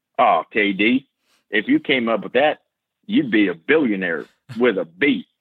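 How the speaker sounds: put-on slight Southern accent. Quoting what Wes said when he heard the idea, in Wes's Southern accent. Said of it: "Wes has this kind of Southern accent".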